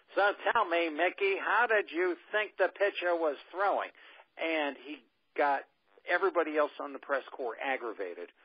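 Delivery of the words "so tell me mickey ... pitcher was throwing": booming, raised voice. Acting out Howard asking Mickey a question over everyone else in the press, booming Howard voice. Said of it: "in his booming voice".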